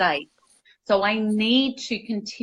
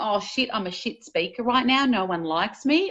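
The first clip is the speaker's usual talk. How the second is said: ordinary delivery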